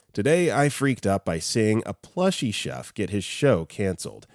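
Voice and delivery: ordinary delivery, nothing marked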